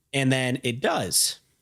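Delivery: plain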